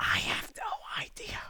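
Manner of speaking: very quiet, hushed whisper, barely above breath. Answering while another speaker asks why everyone is whispering, whispering. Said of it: "Why are we whispering?".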